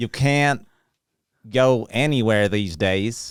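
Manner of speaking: Southern US Ozarks accent. Taking a turn at doing an accent, in an Ozarks accent. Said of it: "I like to think that my accent's pretty good".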